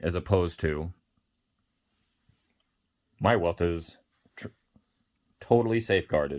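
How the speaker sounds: speech interrupted by hiccups. Speaker talking while drinking coffee, with hiccups. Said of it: "I have the hiccups here".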